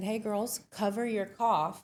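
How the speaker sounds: ordinary delivery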